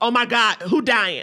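ordinary delivery

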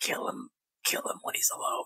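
quiet, urgent voice. Player character sidling up close to a companion, hushed urging. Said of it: "sidle up real close to Falas and go".

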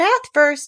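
cheery, sunny voice. Narrator reads Kanga's line to Piglet, cheerful voice. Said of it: "said Kanga in a cheerful voice".

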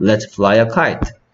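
slow, clear, carefully articulated delivery.

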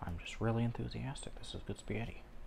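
sarcastic deadpan, soft and fast.

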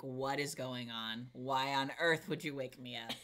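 play-acted furious, livid, angry outburst. Retelling being woken from deep sleep: imitating being livid. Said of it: "I was livid".

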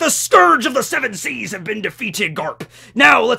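full pirate voice, pitched slightly high. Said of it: "Roger is a piratey pirate, so he's like".

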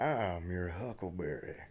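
sultry, very low murmur, barely audible. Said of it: "he says it a bit more, uh, sultry-like".

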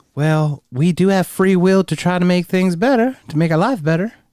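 exaggerated Southern accent. Voicing what people using in vitro would say, in a Southern US accent. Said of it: "Why'd you get all Southern just now?".

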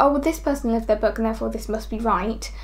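normal talking voice

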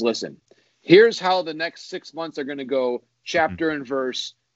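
ordinary talk

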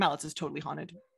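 mock deadpan delivery, acted. Speaker quoting a full-timer's remark to them, imitating deadpan delivery. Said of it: "said very deadpan to me".

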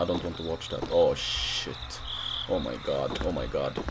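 very soft, low, frightened hush.

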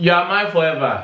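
shouting. Practicing a scene line with a partner, shouting. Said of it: "You're talking too loud. You're shouting".

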